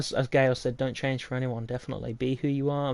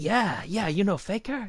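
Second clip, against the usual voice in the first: put-on South Korean accent, high and slow; 7 semitones higher than usual. Retelling a uni chat, the speaker imitates a friend from south korea, put-on south korean accent. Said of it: "I probably shouldn't do the accent".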